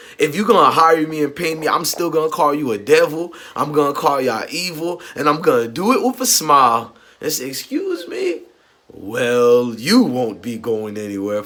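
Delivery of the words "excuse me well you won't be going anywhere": slow, swooping voice, "well" stretched out long.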